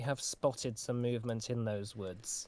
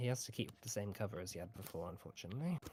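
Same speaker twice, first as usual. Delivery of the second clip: soft, hushed half-whisper; 3 semitones lower, 8 dB quieter than usual. A game master voices a character half-whispering to a player: half-whispering. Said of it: "sort of whispers to you and says".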